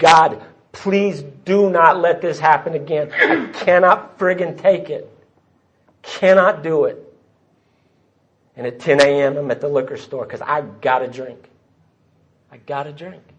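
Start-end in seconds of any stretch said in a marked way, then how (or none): 0.0-7.0 tearful, crying pleading, pitched higher. Retelling a desperate prayer to god: retelling own crying prayer. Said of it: "to crying".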